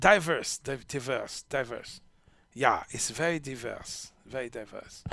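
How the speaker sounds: low, bad German accent sliding into French. Speaker looks for the german word for non-binary, in a bad german accent. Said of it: "that's a bad German accent".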